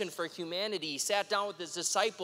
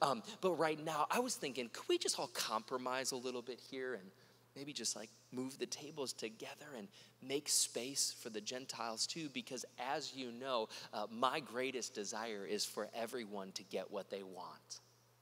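put-on very soft-spoken tone, lower and quieter; 7 semitones lower, 10 dB quieter than usual. Retelling a mock version of a scene at the temple: imitating a very soft voice. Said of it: "very, very softly".

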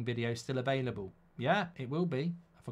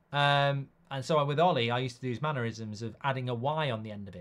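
ordinary talk

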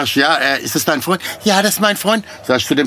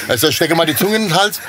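plain

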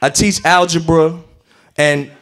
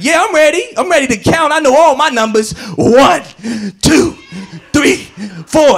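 mock squeaky, very high, overeager voice; 10 semitones higher than usual. A teacher recalls a student eager about math, imitating an excited student. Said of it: "a student that was real excited about math".

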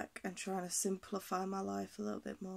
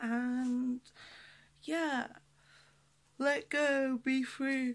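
talking mid-yawn, higher pitch; 4 semitones higher than usual. Signing off to everyone listening, yawning while speaking. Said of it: "Sorry, I'm yawning loads".

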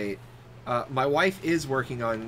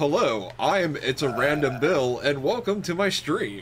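slow, put-on American accent; 5 dB louder than usual. Imagining Bill opening his stream: American-accent Bill impression. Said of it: "Is that how American Bill would sound? It sounds better than any American accent he's ever done".

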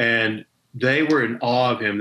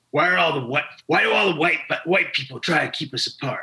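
put-on gravelly voice, higher; 5 semitones higher than usual. Retelling what a man said to a room of Native chiefs: imitating a gravelly voice. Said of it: "he had this gravelly voice".

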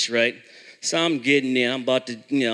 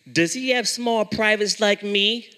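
put-on British accent, pitched up; 8 semitones higher than usual. Retelling a boy's question during a comedy joke, in a British accent. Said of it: "He's got a British accent for this joke".

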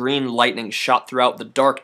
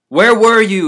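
squeaky, high and loud; 8 semitones higher, 7 dB louder than usual. Narrating the battle story, the seer questions his hired assassin: Yitzkray squeaking. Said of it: "he squeaked".

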